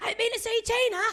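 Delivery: shrill, high, excited shriek at full volume. Retelling calling out to fans on a passing tuk-tuk: retelling own scream. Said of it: "and I just screamed".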